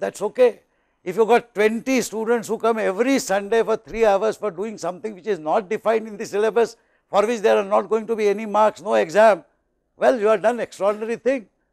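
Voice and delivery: ordinary talk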